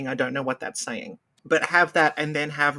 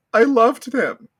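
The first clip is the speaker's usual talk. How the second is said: mimicked woman's voice, higher and louder; 8 semitones higher, 7 dB louder than usual. Retelling a news soundbite from a poisoning case: imitating a woman's news soundbite. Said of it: "she goes".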